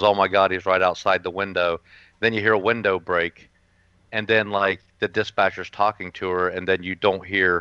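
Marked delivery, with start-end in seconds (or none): none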